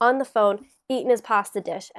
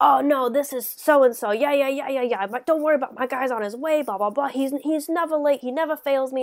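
put-on Brooklyn or Bronx accent, higher, slower; 4 semitones higher than usual. Retelling a man on the phone over Italian food, in a Brooklyn accent. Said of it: "I slipped into an accent here".

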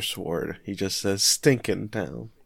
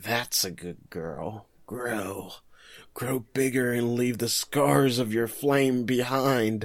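creepy, unsettling man voice. Retelling what the creepy man says to the fire: creepy man voice. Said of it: "the creepy man's just like".

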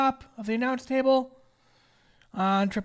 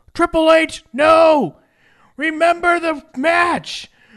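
loud, high-pitched shouting. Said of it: "he literally is like".

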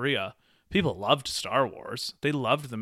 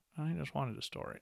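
put-on mousy voice, much quieter; 3 semitones higher, 11 dB quieter than usual. Quoting George Lucas, doing a mousy, quiet George Lucas impression. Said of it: "he's like his kind of mousy, quiet voice".

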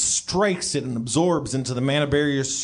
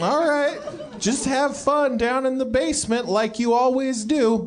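put-on very high, elderly woman voice; 11 semitones higher than usual. In a role-play, the old woman answers the one who brought a girl home: old lady voice. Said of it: "You see an old lady ruffling around".

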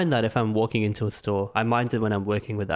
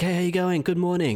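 mock bright, high, all-happy cheery voice; 8 semitones higher than usual. Recalling a guy who walked in each morning, imitating his happy greeting. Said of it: "this guy would walk in all happy".

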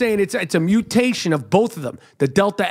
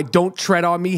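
normal talking voice

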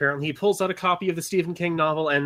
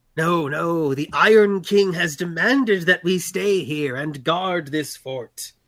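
horrible screeching voice, no drawn out long; 4 dB louder than usual. A guard approaches the party and answers them, screeching in his horrible voice. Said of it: "One of the batters approaches you and screeches in his horrible voice".

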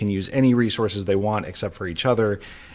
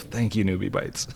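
murmured under breath, quieter and slower; 4 dB quieter than usual. Teacher retelling a student's remark after finding a newbie bite, quietly to herself. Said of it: "quietly say to herself".

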